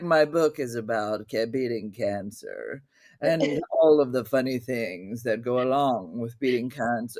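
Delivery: very low, lounging, sophisticated smoking-jacket voice. Retelling a friend's pitch from an egg chair: imitating a lounging smoking-jacket character. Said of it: "a character in a smoking jacket with a cig-".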